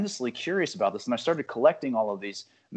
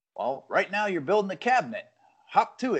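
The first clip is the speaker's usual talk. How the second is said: mock cynical, sarcastic tone, slightly higher pitch; 6 semitones higher than usual. Retelling a story where a voice answers the carpenter's claim, imitating a cynical voice.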